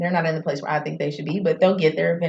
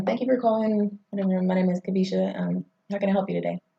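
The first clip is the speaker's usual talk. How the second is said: polished, professional customer-service phone voice. Asked about her phone voice, showing how she answered calls at a former job: professional phone voice. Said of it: "It's like this right here".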